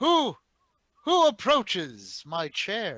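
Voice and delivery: loud, boisterous character voice. Voicing Su Kang as someone approaches his chair, in a loud, boisterous voice. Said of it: "in a loud, boisterous voice".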